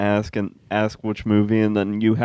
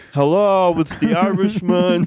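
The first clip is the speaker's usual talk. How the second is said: insistent, forceful, pounding, pitched-up calling out; 9 semitones higher than usual. Showing the others an impression just seen online: Robert De Niro impression. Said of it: "I just saw somebody doing an impression of him".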